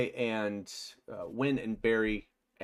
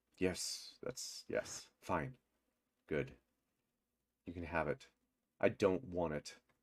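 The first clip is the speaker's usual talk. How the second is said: low, quiet, sheepish, hesitant and stumbling; 4 semitones lower, 8 dB quieter than usual. Narrating a scene, the speaker voices him answering her glaring demand, sheepish. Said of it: "he just like sheepishly just".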